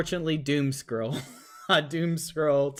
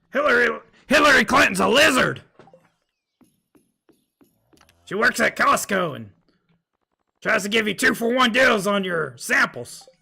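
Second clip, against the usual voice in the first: raised, loud, pitched-up, raspy scraping voice; 7 semitones higher, 7 dB louder than usual. Doing an impression for the chat: Alex Jones impression. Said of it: "I gotta do my Alex Jones impression".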